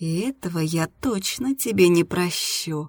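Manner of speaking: usual speaking voice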